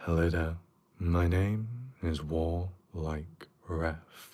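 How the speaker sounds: deep, slow, dropped-down voice. Describing the other style, not asmr, just a deeper voice. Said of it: "it's just like a deeper voice".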